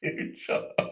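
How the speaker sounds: hushed, whispered protest with laughter.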